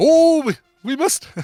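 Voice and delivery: put-on bad Swiss accent, high-pitched and loud.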